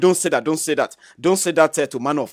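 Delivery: ordinary talk, nothing marked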